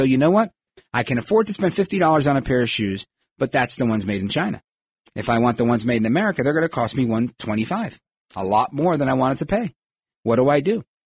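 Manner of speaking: normal talking voice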